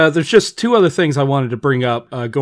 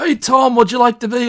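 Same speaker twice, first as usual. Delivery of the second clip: put-on Australian accent, high pitched; 10 semitones higher than usual. Retelling how someone asked a famous actor onto a show: imitating Peter Capaldi in Australian accent. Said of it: "why I made him Australian".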